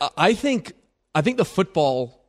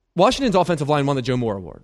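very fast, rushed delivery. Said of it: "'cause you said it so fast".

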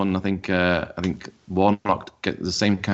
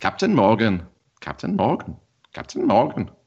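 bad put-on Welsh accent, sing-song; 3 semitones higher than usual. Co-hosts take turns saying a name in Welsh; bad Welsh accent. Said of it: "That's not a good Welsh accent".

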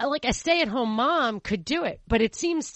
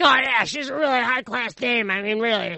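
rough, raspy smoker's voice; 3 dB louder than usual. Retelling what the brother said about her, imitating a raspy voice. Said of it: "raspy voice".

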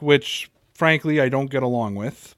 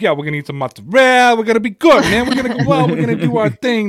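put-on Italian-American accent laid on thick; 7 semitones higher, 4 dB louder than usual. Retelling the way the speaker used to talk after watching a TV show; thick Italian-American accent. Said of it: "American-Italian accent got thicker".

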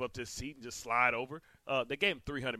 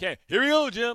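very loud, high, eager call, belted out; 11 semitones higher, 12 dB louder than usual. Imitating a broadcaster calling a game: Tony Romo impersonation. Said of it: "your, uh, Tony Romo impersonation".

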